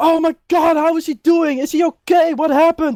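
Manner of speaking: high, anxious, worried crowd voices chattering.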